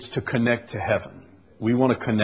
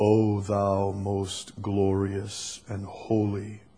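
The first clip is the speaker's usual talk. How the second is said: soft, deepest resonant prayer voice; 5 dB quieter than usual. Retelling how people prayed from a notebook, imitating a deep, resonant prayer voice. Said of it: "in the deepest resonant voice".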